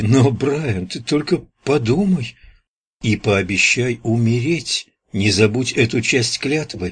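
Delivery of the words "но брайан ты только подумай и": plain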